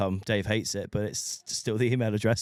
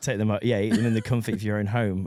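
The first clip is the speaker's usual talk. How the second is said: plain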